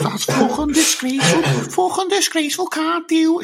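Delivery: very high, squeaky little voice. Mocking a pundit's reaction to a penalty: Jamie Carragher impression. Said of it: "with his stupid squeaky little voice".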